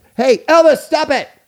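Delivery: very loud, high-pitched fatherly yell. Showing their yelling, the way their dad used to yell: yelled loudly like a dad. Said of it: "I'm yelling like how my dad yelled".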